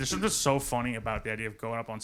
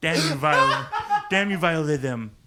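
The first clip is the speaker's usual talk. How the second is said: very loud, high bellow with big pitch swoops; 5 semitones higher, 9 dB louder than usual. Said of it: "what if Stewie Griffin was Dice?".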